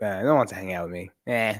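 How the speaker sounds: sigh-laden, always-negative, sighing grumble. Speaker demonstrates how they always used to sound; sighing, negative. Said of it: "From always with a sigh, right? Always negative".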